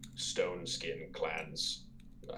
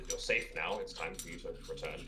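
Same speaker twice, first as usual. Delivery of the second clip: plain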